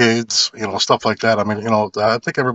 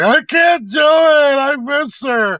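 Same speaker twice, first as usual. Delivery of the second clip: put-on very high, very slow, drawn-out sobbing wail; 4 dB louder than usual. Imagining how he'd react bringing a woman home, acting out bawling. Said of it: "to start bawling like".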